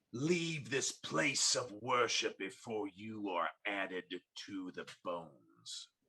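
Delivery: snarling, growled, menacing tone. Game master voices a woman who has just struck a player: snarling. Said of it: "as she snarls and says".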